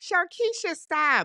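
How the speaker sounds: high-pitched pretend yell.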